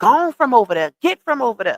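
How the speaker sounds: mock stressed, frustrated, fed-up tone. Speaker quotes a father's words to his daughter, imitating a frustrated man. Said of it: "the frustration in his voice when he said".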